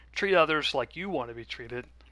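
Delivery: normal talking voice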